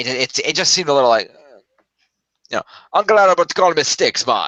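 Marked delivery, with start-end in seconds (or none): 2.9-4.5 over-the-top, sing-song, put-on Jamaican accent. Imitating a film character's over-the-top voice: stereotypical jamaican accent imitation. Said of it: "Like that".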